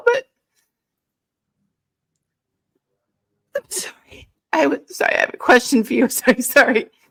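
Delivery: tearful crying, voice and words breaking apart. Speaker unexpectedly crying mid-conversation, apologizing, crying. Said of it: "I'm not really sure why I'm crying right now".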